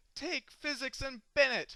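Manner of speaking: high, loud, overjoyed yelling. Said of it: "I will run through the streets yelling".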